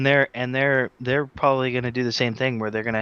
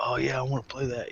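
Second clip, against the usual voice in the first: put-on stoner dude bro voice; 9 dB quieter than usual. Voicing own reaction to a Nintendo game: put-on dude bro voice. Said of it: "your Nintendo gamer voice, or was that your dude bro voice".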